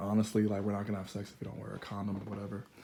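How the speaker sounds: rushed, fast, hushed stage half-whisper. Telling a story about a couple and catching themselves half-whispering. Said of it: "Why am I whispering?".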